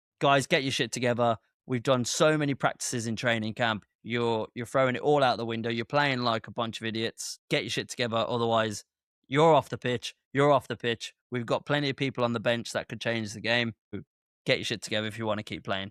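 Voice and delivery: put-on firm, stern, no-nonsense manager voice. Imagining a manager's halftime talk to his players: imitating a stern no-bs manager. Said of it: "I imagine he's very no B S".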